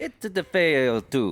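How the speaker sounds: high video-game plumber accent. Saying a bottle name after being asked to: Mario accent. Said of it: "You have to say it in your Mario accent".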